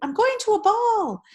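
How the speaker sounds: very high, make-believe doll voice. A narrator reads a girl dancing her doll, announcing in a high pretend voice. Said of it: "she announced in a high pretend voice".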